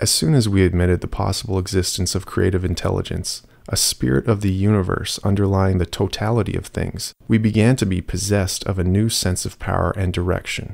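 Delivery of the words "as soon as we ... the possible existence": ordinary delivery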